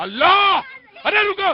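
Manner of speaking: high-pitched, loud, exasperated shouted outcry.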